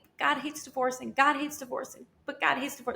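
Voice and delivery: acted sobbing, words cried through sobs. Retelling sobbing on the phone to a pastor: imitating own past sobbing. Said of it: "I was just sobbing and saying".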